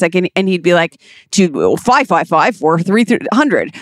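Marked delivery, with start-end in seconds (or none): 1.3-3.8 weird, put-on commercial voiceover announcer voice. Recalling old commercials, imitating the voiceover guy: weird commercial voiceover voice. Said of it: "He had like a really weird voice".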